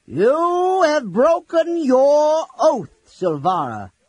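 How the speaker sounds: towering, very loud, very high booming voice. Reading a story aloud, the old mage addresses Silvara: Fizban booming. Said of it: "Fizban boomed".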